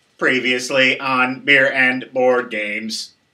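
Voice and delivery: flat, monotone, mechanical robot voice. Recording the show's 'previously on' intro, robot voice. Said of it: "I'll do it like a robot".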